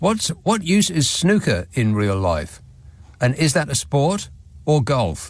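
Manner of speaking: usual speaking voice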